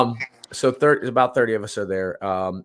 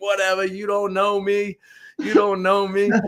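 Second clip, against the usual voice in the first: put-on play-acted belligerent drunk screaming, slow and high; 10 semitones higher than usual. Retelling dragging a drunk guy back to the tent; imitating drunk screaming. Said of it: "he's like screaming".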